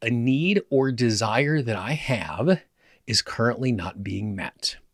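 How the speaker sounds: plain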